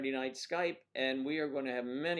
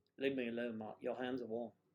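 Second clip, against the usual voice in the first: put-on, soft British accent; 2 semitones lower, 5 dB quieter than usual. Throwing a voice onto a bottle, British accent. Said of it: "throw my uh, British accent to this bottle".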